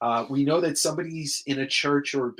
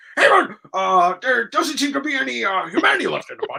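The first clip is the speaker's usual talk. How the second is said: very high, loud, squeaky put-on voice; 10 semitones higher, 5 dB louder than usual. Quoting a podcast host's impression of Todd: imitating Rob Liefeld's Todd impression. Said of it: "his impression of Todd is".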